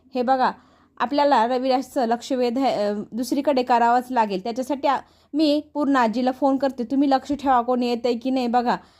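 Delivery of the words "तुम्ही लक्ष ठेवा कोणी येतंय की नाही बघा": ordinary delivery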